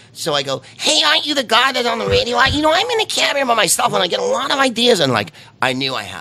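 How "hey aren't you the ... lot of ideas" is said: very high, annoying, put-on New York accent. Retelling playing a cab driver who recognizes the radio host, New York accent. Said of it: "I did a New York accent".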